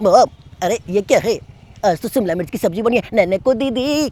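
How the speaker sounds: put-on fast childlike cartoon voice. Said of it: "Shinchan fast बोल रहा है".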